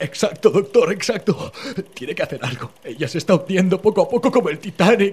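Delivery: high, loud, desperate voice.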